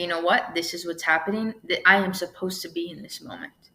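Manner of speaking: ordinary talk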